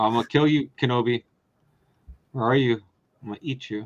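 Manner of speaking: creepy, low put-on spooky villain voice. Joking after the other speaker mentions spooky voices: spooky voice. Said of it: "speaking of spooky voices".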